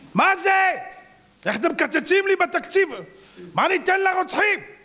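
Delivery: very high, slow, drawn-out mocking whine. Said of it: "אבו מאזן התלונן".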